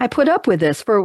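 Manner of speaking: ordinary talk, nothing marked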